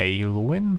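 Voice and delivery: unsure delivery with a questioning rise at the end.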